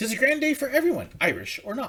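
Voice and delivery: terrible fake Irish accent, sing-song. Reading a Saint Patrick's Day verse aloud, terrible Irish accent. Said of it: "I know I have a terrible Irish accent".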